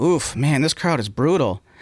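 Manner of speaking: put-on passive-aggressive, almost angry tone. Retelling a struggling comedian's remark to the crowd: imitating a passive-aggressive complaint. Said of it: "being very passive aggressive and almost angry".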